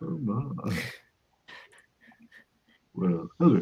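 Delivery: fake, smooth, deep, put-on baritone. Joking along with co-hosts: put-on baritone voice. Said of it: "This is getting very baritone".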